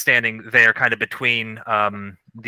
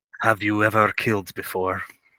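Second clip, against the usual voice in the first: hushed, low half-whisper under the breath; 4 dB quieter than usual. Voicing a character who questions a man, low and almost half-whispering. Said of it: "says in a low voice, almost whispering to this man".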